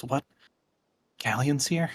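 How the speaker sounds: flustered, stumbling stammer, tripping over words. Voicing a woman told that someone is in the study: stumbling over her words. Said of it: "she sort of stumbles over her words".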